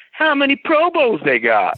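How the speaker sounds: very high-pitched, swooping delivery. Speaker retells the reply to his question about rival cornerbacks, Aqib Talib's high-pitched voice. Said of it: "in his high pitched voice".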